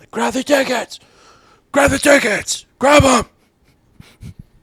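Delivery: put-on shrill, loud scream, very high. Retelling going in there with both boys while her sister watched: retelling own screaming. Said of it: "I'm just screaming like".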